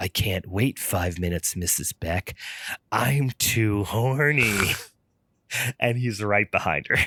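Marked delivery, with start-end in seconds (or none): 0.0-4.7 put-on menacing man's voice, much slower. Retelling what a man said to a woman on the phone, put-on scary guy voice. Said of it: "doing a scary guy voice".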